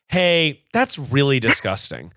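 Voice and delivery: pitying, unamused tone with a touch of pity. Coaching what to say before sitting back down: with a little pity. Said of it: "have a little bit of pity in your voice".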